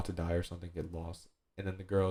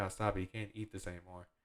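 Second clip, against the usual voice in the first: put-on tearful, weepy crying girl voice; 8 dB quieter than usual. Retelling a scene where a girl pleads as her food is destroyed: imitating a girl crying. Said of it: "the girl's just crying".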